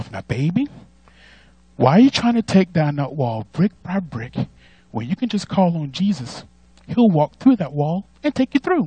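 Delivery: very soft, gentle motherly voice. The speaker says a message the way their mama says it: imitating mama, nice and soft. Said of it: "I'll say it like she does, real, real nice and soft".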